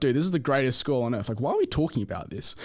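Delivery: plain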